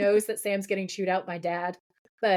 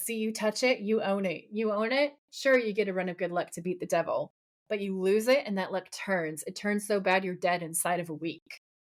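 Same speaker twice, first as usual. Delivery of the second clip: usual speaking voice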